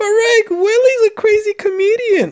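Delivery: shrill outcry, pushed very high and loud. Asked how Morty sounds, the speaker answers in a Morty voice. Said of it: "how does Morty sound?".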